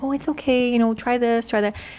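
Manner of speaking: put-on sweet tone. Recalling coaching a girl who made a mistake, retelling speaking sweetly. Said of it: "I'd be so sweet to her".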